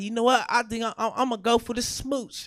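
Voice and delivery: ordinary talk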